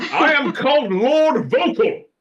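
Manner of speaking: very high, loud, grand, theatrically enunciated voice. Joking about playing a character with diction and verve: booming voice with diction and verve. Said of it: "speaks with diction and verve".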